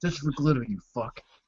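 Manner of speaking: muttering under breath. Saying a character's line quietly after a shot: mumbling. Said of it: "I'm mumbling to, like".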